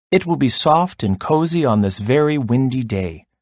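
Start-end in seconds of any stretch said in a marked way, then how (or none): none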